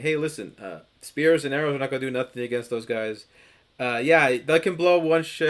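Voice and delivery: ordinary talk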